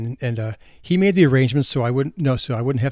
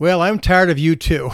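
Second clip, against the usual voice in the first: very loud, booming voice; 4 semitones higher, 4 dB louder than usual. Telling a joke about a husband who can't hear his wife; retelling a very loud reply. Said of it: "And he replied very loudly".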